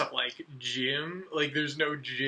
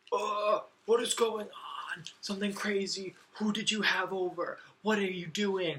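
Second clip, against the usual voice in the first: high-pitched, screaming voice; 6 semitones higher than usual. Retelling a phone call from dad: imitating dad screaming. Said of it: "this call from my dad screaming".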